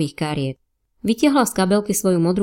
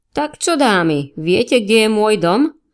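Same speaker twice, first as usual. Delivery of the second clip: put-on drunken voice, higher and slower; 3 semitones higher, 4 dB louder than usual. Narrator reads a character asking two women a question: drunken voice. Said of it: "Spýtal sa Spencer opileckým hlasom".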